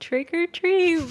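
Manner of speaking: very high, tiny, really high-pitched squeaky voice. Retelling how a dad said it to get candy: imitating a high-pitched voice. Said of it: "in a really high-pitched voice".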